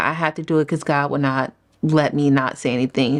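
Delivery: ordinary delivery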